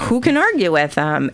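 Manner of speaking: usual speaking voice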